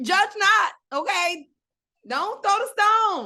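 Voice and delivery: high, loud, sassy rebuking tone.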